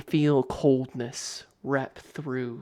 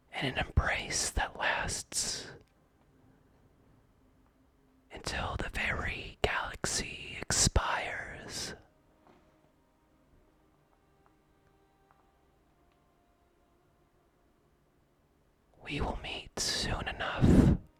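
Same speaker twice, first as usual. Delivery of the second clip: whispered, much higher, quieter; 5 dB quieter than usual. Narrating to Alder, the speaker voices a bridal skeleton's reply: whispered. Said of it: "utters in a whispered tone".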